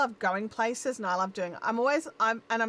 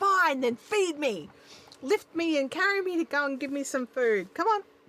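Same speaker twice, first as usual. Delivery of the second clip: loud, hollering, yelling cat voice; 4 semitones higher than usual. Voicing the cat yelling to be fed: imitating a yelling cat. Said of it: "he started really yelling, like".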